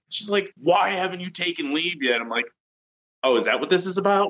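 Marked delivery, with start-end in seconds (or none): 0.5-2.2 mock pissed-off, angry commander voice. Retelling being called in, the speaker imitates her angry company commander. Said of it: "she is just pissed".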